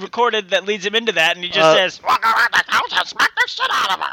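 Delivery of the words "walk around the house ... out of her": silly, cartoonish felt-puppet character voice. Quoting what he says on a recording, in a Muppet voice. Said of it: "Why the fuck do I talk like a Muppet in your head?".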